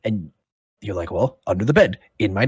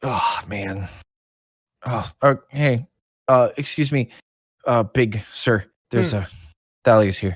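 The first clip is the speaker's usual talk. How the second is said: drowsy, sleepy, hesitant, fumbling words. Voicing the sleepy guy at the desk, trying not to drool at an omelet: sleepy desk clerk voice. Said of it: "the sleepy guy at the desk".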